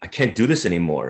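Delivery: plain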